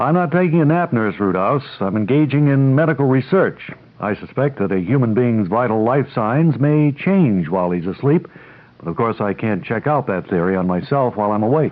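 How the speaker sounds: usual speaking voice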